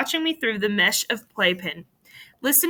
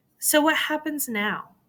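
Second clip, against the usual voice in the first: small, pitched-up voice; 5 semitones higher than usual. Narrator of a first-person story asks a question, in a small voice. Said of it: "I ask in a small voice".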